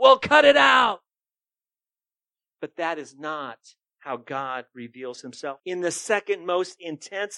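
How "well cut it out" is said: loud, pitched-up yelling. Retelling how the Lord leans over heaven's railing at people: imitating someone yelling. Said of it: "he yells at them".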